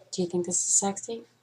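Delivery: hushed, deep, sexy voice, very quiet. Testing the claim that women can make their voice sound sexier, trying a sexy voice. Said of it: "I can't even look at myself when I talk like that".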